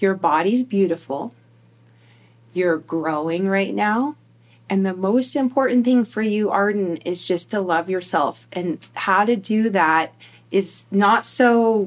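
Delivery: ordinary talk, nothing marked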